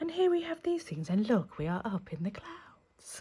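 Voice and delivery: put-on polite front-desk receptionist voice. Imitating the other speaker describing a mountaintop video: receptionist voice. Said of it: "your receptionist voice".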